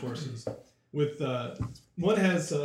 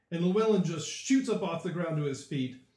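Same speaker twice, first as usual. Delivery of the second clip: ordinary delivery, nothing marked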